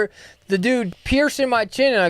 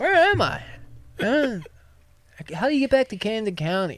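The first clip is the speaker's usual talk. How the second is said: put-on slurred speech; 4 dB quieter than usual. Retelling walking into a store bleary-eyed at nineteen, mimicking slurred words. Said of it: "probably still slurring my words".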